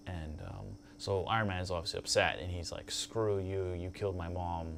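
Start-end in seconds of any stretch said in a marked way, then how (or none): none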